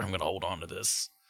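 normal talking voice

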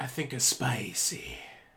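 Mexican wrestler movie voice. Asked a would-you-rather question, answering in a Nacho Libre voice. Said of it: "I don't know why I did a Nacho Libre voice".

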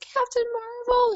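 put-on very high little-girl shriek at the top of the lungs. Speaker retelling a little girl spotting her at a comic con, retelling a scream. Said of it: "screamed at the top of her".

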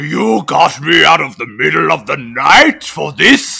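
indignant, angry, rough-voiced villain voice. Retelling a villain woken at night: imitating an angry Mumra. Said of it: "Mumra is pissed off".

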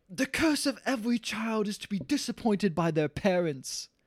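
put-on woman's voice. While the hosts are doing accents, quoting what she says in her voice. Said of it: "Let me do it in her voice now since we're doing accents".

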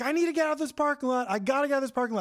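acted, high, rushed, repeated yelling, words tumbling out. Telling a parking-lot story, acting out a man yelling to get out. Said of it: "he's yelling like".

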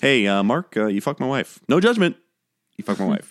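matter-of-fact, unbothered, deadpan delivery. Imitating a character telling another he slept with his wife: imitating Derek, matter-of-fact. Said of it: "he says it so matter-of-factly".

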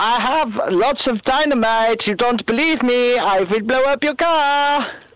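put-on comic Swedish chef accent. Imagining what a man trying to frighten people said, in a Swedish Chef voice. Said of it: "why are you talking like a Swedish chef?".

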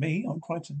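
ordinary delivery, nothing marked

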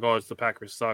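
ordinary delivery

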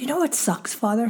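plain

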